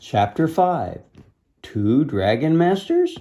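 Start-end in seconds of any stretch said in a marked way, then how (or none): 1.6-3.2 questioning upward rise at end of masters. Reading a chapter title with a question mark: rising pitch on masters. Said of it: "That's why I raised my tone right at the end of that".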